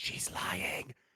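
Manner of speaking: breathy whisper, close and under the breath. Voicing Sebastian whispering a warning in a player's ear: Sebastian whispering. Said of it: "You hear Sebastian whispering in your ear".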